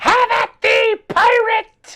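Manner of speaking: small, high pixie voice. Voicing a pixie challenging a player to fight: tiny pixie voice. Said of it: "the one right in front of your face says".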